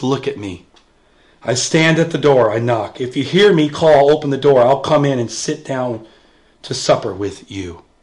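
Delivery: put-on very low, tender, soft and kind voice. Explaining a church passage, the speaker quotes what He says: quoting someone very kindly. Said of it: "He says it very, very kindly".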